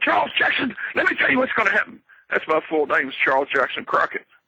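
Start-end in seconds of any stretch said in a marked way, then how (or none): 0.0-2.0 very high-pitched, intense, building, ready to explode. Retelling how a wrestler built up energy in a promo: Ric Flair impression, building to explode. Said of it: "It looked like he's getting ready to explode. And you'd hear him go".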